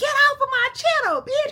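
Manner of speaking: very high, loud, all-out cussing scream. Retelling screaming at the phone about a man on the channel: imitating own past screaming. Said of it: "screaming at the T V, like, at my phone so loud".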